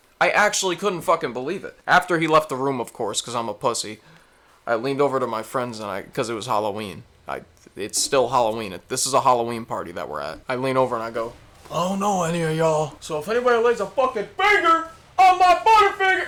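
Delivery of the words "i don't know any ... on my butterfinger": acted, very high, swooping, rising shrill yell. Retelling what he told friends at a Halloween party: yelling his own past words. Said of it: "I didn't yell like that".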